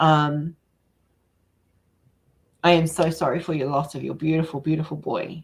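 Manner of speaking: tearful and choked up, voice breaking. Offering condolences to someone who lost their boy, tearful, voice breaking. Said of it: "I'm not going to get through this without crying".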